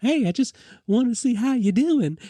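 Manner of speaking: sweet, cute, high-pitched voice. Retelling a film scene, quoting how Shelley greets him: imitating Shelley, sweet and cute. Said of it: "she's so sweet and she's so cute".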